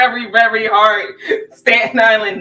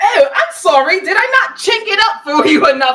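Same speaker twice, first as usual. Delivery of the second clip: put-on British accent, pitched up; 9 semitones higher than usual. Retelling a comedy scene, imitating a British accent. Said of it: "the Chinese man had a British accent".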